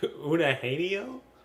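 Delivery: slow, wide, high Eugenio, stretched heavy A, E.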